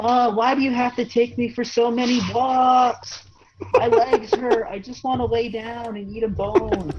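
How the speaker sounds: squeaky, very high complaining dog voice. Speaker voices the family dog complaining, in a high-pitched dog voice. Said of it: "I'll hear like a high pitched voice".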